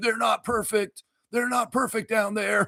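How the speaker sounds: put-on courtside coach yelling, very high and heated. Retelling a coach yelling at the refs: imitating Nick Nurse yelling. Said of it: "Nick Nurse is yelling at the refs".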